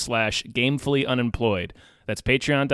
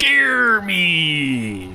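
pretend pirate accent, higher and louder; 5 semitones higher, 5 dB louder than usual. Repeating a film title back to the other speaker: put-on pirate voice. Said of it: "I don't know why I said that like a pirate".

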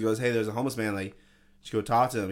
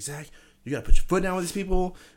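shrill, very high, raised yelling; 9 semitones higher, 7 dB louder than usual. Retelling how the manager scolded him: imitating the manager yelling. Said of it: "yelling at me".

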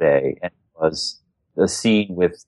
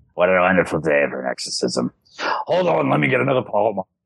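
put-on heavy smoker's voice. Joking about the dubbed possessed voice: Regan's dubbed voice, like a heavy smoker. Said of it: "had smoked a carton of cigarettes".

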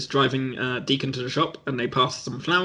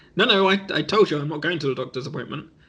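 ordinary talk, nothing marked

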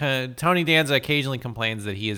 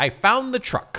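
mock very high, crowing, triumphant delivery; 11 semitones higher than usual. Speaker retells a man phoning back after driving off after the truck; retelling a triumphant call. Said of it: "calls and says triumphantly".

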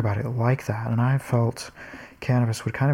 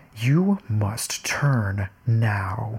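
play-acted aggressive, menacing sat-nav voice, "now" stretched out. Retelling how the GPS talked while they were using it, imitating a menacing GPS voice. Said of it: "it sounded totally menacing".

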